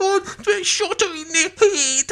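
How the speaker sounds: fake sobbing. Retelling what a man said at a trial, imitating sobbing.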